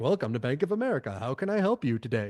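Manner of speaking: robotic, automated customer-service phone-menu voice. Speaker imitating a customer service call, in a Bank of America automated voice. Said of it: "when you call customer service and it's like".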